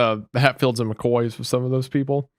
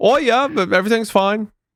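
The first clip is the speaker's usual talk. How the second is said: put-on Australian accent, pitched very high; 10 semitones higher, 4 dB louder than usual. Mocking Australians' shrugging reply: imitating an Australian accent. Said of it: "I don't know what accent that was".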